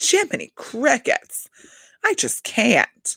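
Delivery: bougie, high, swooping delivery. Recalling the most bougie way someone said an expression: mock-bougie delivery. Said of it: "the most like bougie way to like say".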